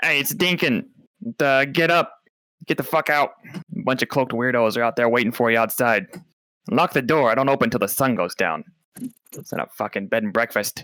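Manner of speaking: small, gruff little voice. Narrating a scene, voicing a character pounding on the door, small gruff Dinkin voice. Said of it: "you hear a small, gruff voice".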